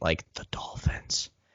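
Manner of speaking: soft, whispered sarcastic tone.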